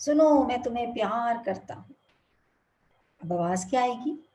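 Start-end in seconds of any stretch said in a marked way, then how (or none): none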